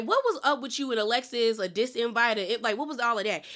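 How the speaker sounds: plain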